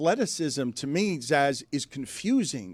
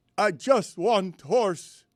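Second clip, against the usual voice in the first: put-on Serbian accent, very slow, each word drawn out; 3 semitones higher than usual. Imitating a basketball player's line: imitating Jokic's Serbian accent. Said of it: "I didn't know whether I was allowed to do his accent".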